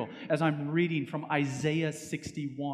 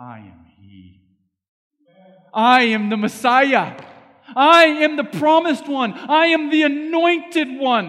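meek, slow, drawn-out, very high and very loud; 9 semitones higher, 14 dB louder than usual. Voicing Jesus answering the woman at the well: Jesus's meek, soft-spoken voice. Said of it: "a very meek, soft-spoken voice".

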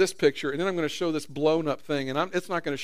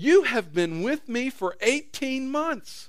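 mildly exasperated, frustrated, slightly higher pitch; 8 semitones higher than usual. Voicing a quoted figure's words aloud, acting a little exasperated. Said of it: "I think he might be a little exasperated. I think the tone of this probably sounds a little something like this".

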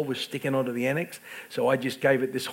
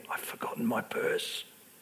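barely audible, very hushed, breathy whisper; 3 semitones lower, 8 dB quieter than usual. Retelling what a lady at the register said: imitating a very quiet voice. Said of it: "very, very quietly".

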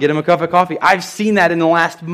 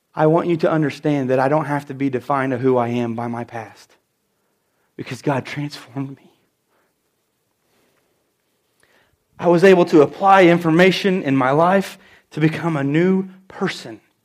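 tender, intent, heartfelt, loving, acted-out tone; 3 semitones lower than usual. Retelling their reply to a woman who doubted they're a preacher; retelling speaking with love. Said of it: "with as much love as I could say in my voice".

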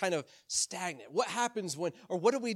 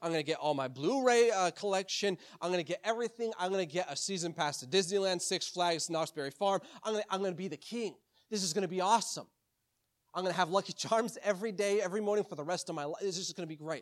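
normal talking voice

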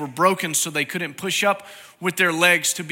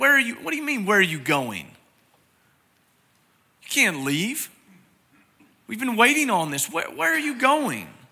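put-on stunned, disbelieving tone, pitched up; 6 semitones higher than usual. Speaker retelling the Gospel of John scene where Thomas questions the Lord, acting out incredulous disbelief. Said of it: "You can almost hear it in his voice".

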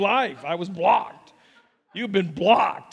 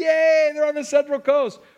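high, loud, happy cheer. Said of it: "we'll all say".

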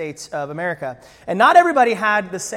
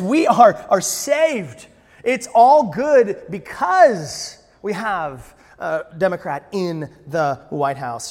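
ordinary delivery

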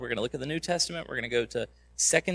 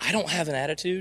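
play-acted, pitched-up, sassy middle-schooler voice with attitude; 5 semitones higher than usual. Imitating a middle schooler answering a parent: imitating a kid saying it with attitude. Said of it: "as they say it with an attitude".

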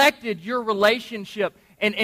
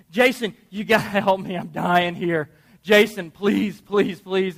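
mock frantic, desperate pleading; 2 semitones lower than usual. Acting out a wife at wit's end begging her husband for help: imitating a frantic wife pleading. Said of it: "she runs up to you and she says".

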